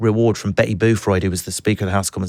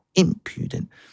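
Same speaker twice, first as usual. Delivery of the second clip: impudent with stress on first syllable im; 9 semitones higher, 4 dB quieter than usual. Learning a word's pronunciation marks: stress on im in impudent. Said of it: "it's impudent on the first syllable".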